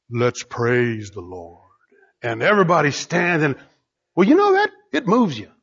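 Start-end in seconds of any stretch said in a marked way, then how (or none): 0.1-1.6 very low, deep, rich, beautiful baritone. Describing someone speaking over sunset pictures on a screen, in a beautiful baritone voice. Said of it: "saying in a beautiful baritone voice".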